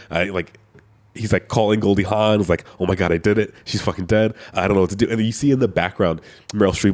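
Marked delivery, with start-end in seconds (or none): 2.8-5.1 imitated panicked freaking out. Retelling a movie scene where a character panics on the phone: imitating someone freaking out. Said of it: "legit freaking out".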